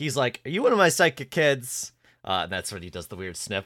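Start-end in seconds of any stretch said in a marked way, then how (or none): 0.4-1.9 proud, loud, raised voice, pitched up. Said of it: "the proud way he said that".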